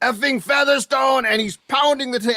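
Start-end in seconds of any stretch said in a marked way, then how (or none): 0.0-1.2 put-on loud yell in a French accent. Retelling how a man yelled every time a defenseman was on the ice, imitating Ron Karan yelling. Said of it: "in a French accent, he's yelling".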